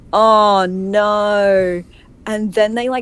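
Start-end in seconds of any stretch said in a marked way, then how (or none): 0.1-1.8 put-on Australian accent, with the no drawn out. Retelling a dinner with Americans, imitating own past words in an Australian accent. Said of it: "made me go".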